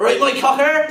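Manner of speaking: very loud, high-pitched, shrill, booming shout. Retelling a customer coming into the bar: imitating Jimmer shouting. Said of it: "he'll just shout out".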